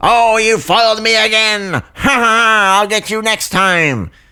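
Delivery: very high cartoon villain voice with a drawn-out ha. Doing a Saturday morning cartoon villain line: Skeletor voice. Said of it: "That is Skeletor".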